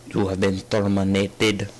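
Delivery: bad, flat, level movie-robot style voice. Narrating killing the wolf: Terminator voice. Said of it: "This is horrible Terminator voice".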